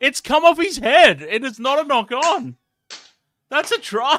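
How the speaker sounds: laughing through a very high, loud shout. Reacting to a try being scored: laughing while talking. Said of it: "Sorry, I'm laughing my ass off".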